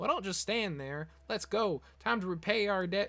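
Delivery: put-on high-pitched Brooklyn accent drifting into Southern. The speaker voices a character's line aloud: higher-voiced brooklyn accent attempt. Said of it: "I can't do a Brooklyn accent with like a higher voice".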